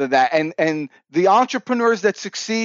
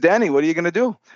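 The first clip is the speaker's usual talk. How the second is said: put-on French accent, laid on. Retelling what the father asked, in the father's French accent. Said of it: "I put on his accent".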